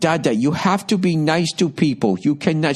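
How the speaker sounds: plain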